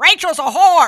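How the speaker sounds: very high, very loud, taunting scream. Retelling what a man kept screaming as the speaker walked into the gym, retelling a scream. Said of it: "Keith just kept screaming".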